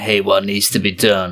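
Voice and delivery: put-on tough-guy gangster mobster voice. Retelling what the listener said on meeting Jackie's grandfather, in a mobster voice. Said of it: "in your mobster voice going".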